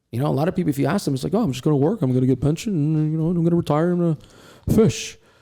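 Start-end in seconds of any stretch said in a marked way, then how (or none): 1.3-5.1 teasing, mocking voice of a typical worker. Imitating what people say about their plans: impersonating a typical worker. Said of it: "impersonation voice".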